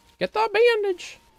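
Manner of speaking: put-on very high, cutesy anime-girl voice. While playing a game level, calling for the bandage in anime waifu voice. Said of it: "we kind of went into our anime waifu voice there for a second".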